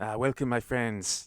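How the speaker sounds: put-on Mexican accent. Voicing a character who welcomes the group to the village, put-on mexican accent. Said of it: "that is Mexican".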